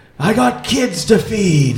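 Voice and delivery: shrill, very high yelled battle cry. A player's character knocks an arrow and yells a battle cry. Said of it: "I yell my battle cry".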